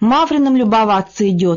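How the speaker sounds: ordinary delivery, nothing marked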